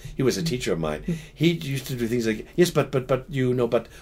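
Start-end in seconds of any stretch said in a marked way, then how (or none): 2.6-3.9 put-on French accent, stammering on "but". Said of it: "this guy with a French accent".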